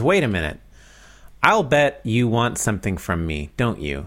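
plain

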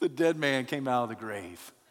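ordinary delivery

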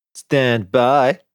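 dim-witted, sarcastic, high machine voice. After the voice interface announces standby, the narrator answers it, mimicking its dumb voice. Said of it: "mimicking his dumb voice".

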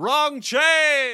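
loud, high-pitched shouting.

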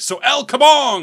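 very high, loud shouted cry. Retelling a video where a guitar-wielding cowboy shouts, imitating a yell. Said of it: "and then yelling".

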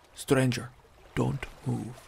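sudden low hissed whisper. Narrator reads a man, frozen and peering behind the hunter, hissed low whisper. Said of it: "he hissed suddenly in a low whisper".

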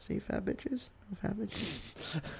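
slow, hushed whisper under the breath. Reading out a list to friends, whispering. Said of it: "I can hear you clearly whisper that".

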